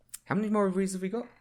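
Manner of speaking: high, uneasy, awkward, really uncomfortable voice. Retelling a post-credit scene: imitating Captain America, awkward and uncomfortable. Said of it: "really uncomfortable and awkward".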